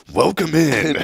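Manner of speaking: spooky narrator voice. Suggesting how to open a sermon: spooky Unsolved Mysteries narrator voice. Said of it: "just be like".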